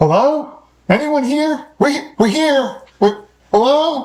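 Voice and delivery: very high, loud announcing yell. Announcing their character to everyone within earshot, yelling. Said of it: "So I'm gonna yell".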